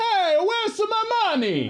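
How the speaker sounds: put-on very high Italian accent. Retelling how he leaned out the car window at a bank, stereotypical Mario accent. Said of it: "He has a straight up stereotypical Mario accent".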